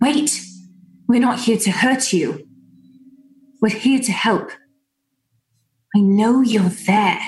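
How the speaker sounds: stage-hushed, quiet voice. Playing a character in a tabletop game, calling out to someone unseen, in a hushed tone. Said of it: "in a hushed tone be like".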